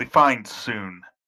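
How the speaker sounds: snide character voice. Speaking in character as Cleoc in reply to a question, snarky Cleoc line. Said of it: "Cleoc just snarkily says".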